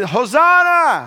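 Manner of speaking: spirited, very loud, high, lively, energetic exclamation. Urging the crowd to say the word with more energy: energetic, lively call. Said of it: "Now say it like it's not Sunday night".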